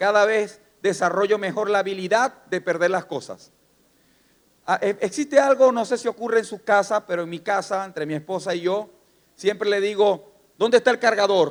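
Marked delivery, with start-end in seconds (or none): 10.6-11.5 bossy, commanding voice of authority. Retelling asking a spouse where the charger went: imitating an authoritative voice. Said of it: "Con voz de autoridad".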